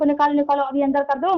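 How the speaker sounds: ordinary talk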